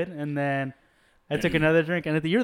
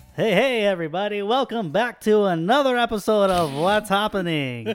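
put-on radio announcer voice, pitched up; 5 semitones higher, 4 dB louder than usual. Opening the podcast episode and greeting listeners, in a radio host voice. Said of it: "Do I sound like a radio host?".

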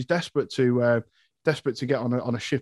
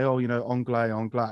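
plain

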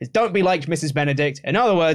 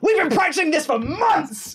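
put-on, very high-pitched, furious, angry scream; 12 semitones higher than usual. Retell how he turned on the band after the cymbals crashed, imitating someone screaming at a band. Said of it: "Screaming at the band".

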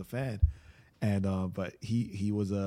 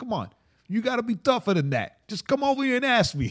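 high, loud put-on New York accent; 8 dB louder than usual. Act out him talking to Junior after smacking him, in Michael Tate's fake New York accent. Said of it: "he put on like a fake New York accent".

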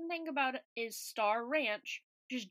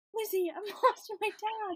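play-acted, pitched-up voice on the verge of tears; 8 semitones higher than usual. Retelling what Hannah kept saying in a meeting: imitating Hannah about to cry. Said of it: "she sounded like she was gonna cry".

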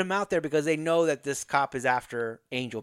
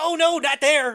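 loud, comic, over-the-top hammy dying groan; 13 semitones higher, 7 dB louder than usual. Retelling an actor being stabbed on a bed: imitating comedic fake dying groans. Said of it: "comedically doing it".

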